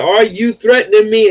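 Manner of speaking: high-pitched put-on shout. Retelling a man's confrontation in front of the police, imitating someone yelling. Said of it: "And then he yelled".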